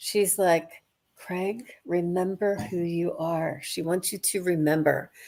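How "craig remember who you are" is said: hushed, soft, close half-whisper. Retelling how she leaned down half-whispering in his ear: imitating a half-whisper. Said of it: "sorta whispering in your ear like this".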